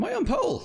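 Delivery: sudden jump up an octave to very high pitch. Noticing an unexpected pole position as the race starts: voice jumped up an octave. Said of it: "voice jumped up an octave there".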